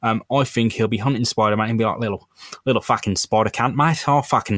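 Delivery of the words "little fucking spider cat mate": put-on Australian accent. Imagining a character hunting Spider-Man, in an Australian accent. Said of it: "I am going to go with the Australian accent".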